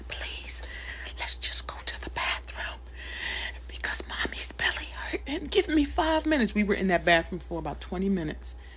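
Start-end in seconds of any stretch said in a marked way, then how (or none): 0.1-6.5 soft, hushed whisper. A mother retelling how she whispered to her child, retelling a whisper. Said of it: "I had to whisper to her".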